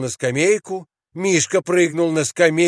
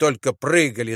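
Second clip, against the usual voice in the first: ordinary delivery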